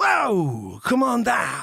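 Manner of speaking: very slow, low, swooping drawl, "whoa" dragged out. Doing voices for a walk to Dunkin' Donuts: Al Pacino and Christopher Walken mix. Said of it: "like a mix of Pacino and Walken".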